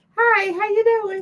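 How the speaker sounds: voice pushed way up high. Showing the voice used when people thought they had a cold, raised high-pitched voice. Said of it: "I had to high pitch up my voice a little bit".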